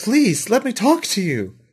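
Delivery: high woman's voice. Running a game, the speaker voices the woman following the players into the store, voicing the woman. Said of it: "She says".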